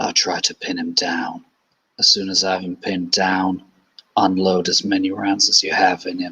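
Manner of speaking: hushed whisper. One character whispers into another character's ear: whispering. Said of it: "And he whispers into her ear".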